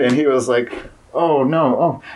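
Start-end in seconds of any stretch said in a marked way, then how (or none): 1.1-2.0 high, rising, really concerned worried voice. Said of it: "really concerned".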